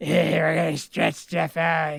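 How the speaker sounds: put-on gruff old man voice. Retelling a childhood wrestling game, doing a Stu Hart impression. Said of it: "that was my Stu Hart impression".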